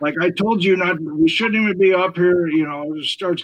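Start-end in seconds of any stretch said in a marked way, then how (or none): 0.2-2.5 put-on loud, aggressive, agitated yell. Retelling what the lady in the next room yelled at the speaker, retelling a lady yelling. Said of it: "starts yelling at me like".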